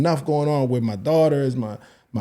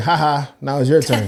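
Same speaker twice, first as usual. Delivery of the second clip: mock dismissive laughing tone; 3 dB louder than usual. Retelling how parents answer a request for advice: imitating a parent laughing it off. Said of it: "they just laugh it off".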